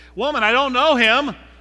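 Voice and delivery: very loud, high, nervous blurted voice. Retelling a man's answer to a woman by the firelight, acting out a nervous reply. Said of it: "You can almost hear the nervous tone".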